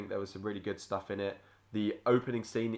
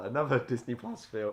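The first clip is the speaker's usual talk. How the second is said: breaking voice, cracking mid-phrase; 3 semitones higher than usual. Reviewing recent movies, voice cracking. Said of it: "voice crack".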